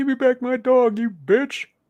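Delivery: very high, loud shriek. Recalling a movie scene he liked, Buffalo Bill impression. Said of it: "This is not the best Buffalo Bill impression".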